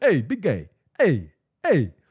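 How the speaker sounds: put-on slow, swooping New York accent. Retelling own words to someone: New York accent. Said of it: "I'm not even from New York and I talk this way".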